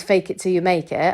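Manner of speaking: usual speaking voice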